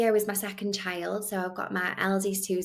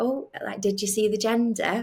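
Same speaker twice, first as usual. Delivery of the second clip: mock excited, eager, keyed-up tone; 2 semitones higher, 4 dB louder than usual. Retelling asking the woman scanning her about the gender: retelling own excited question. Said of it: "I excitedly said to her".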